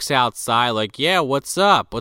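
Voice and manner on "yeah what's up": mock relaxed, unbothered, casual offhand tone. Retelling how Eddie walked out to the guy yelling for him, imitating Eddie's casual tone. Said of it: "so casually".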